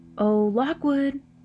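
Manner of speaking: casual, carefree, light high call. Narrator voicing the storyteller calling out to lockwood, a light call. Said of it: "I said as lightly as I could".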